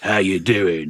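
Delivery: low, slow radio boss voice.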